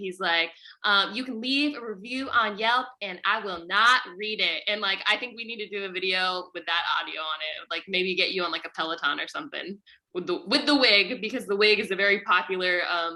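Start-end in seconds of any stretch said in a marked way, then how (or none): 1.1-4.6 super sassy fitness-instructor attitude. Quoting a Peloton instructor's line from a reel: sassy Cody Rigsby impression. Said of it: "such a super sassy guy".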